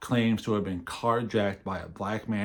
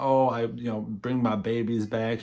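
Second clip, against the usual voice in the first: put-on fake Southern accent; 2 semitones higher than usual. Quoting a woman giving interviews about her missing babies: fake Southern Belle accent. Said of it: "in her Southern Belle accent, she's trying to put on".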